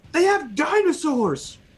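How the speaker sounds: very high shouted call-out. Banging on the truck cab from the turret, warning the others: yelling. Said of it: "and I just yell".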